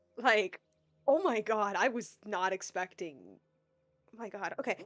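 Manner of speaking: voice choked with tears, tearful, crying. Recapping what happened to him at eight years old, the speaker is crying. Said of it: "if you're wondering if I'm crying, yes, actually, I am".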